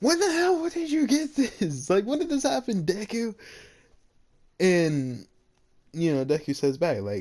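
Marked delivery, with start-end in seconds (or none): 0.0-3.4 very high, scream-like screaming outburst. Retelling an anime scene where one character screams at another: imitating a scream. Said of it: "he kinda screams at Deku".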